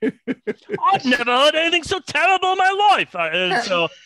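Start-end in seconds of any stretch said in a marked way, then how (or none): 0.0-3.1 very high, loud, belted put-on Belfast accent. Doing the judge impression again in a Belfast accent: Belfast version of Simon Cowell. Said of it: "Belfast version of Simon Cowell".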